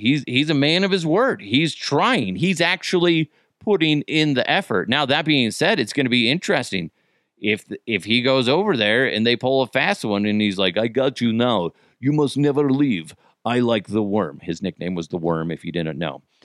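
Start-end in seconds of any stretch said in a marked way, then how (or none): 10.8-14.4 Russian strongman character voice, sounds held out. Joking about a chokehold on a visiting player: Putin impression. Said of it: "that was my impression of, uh, Putin putting him in a chokehold".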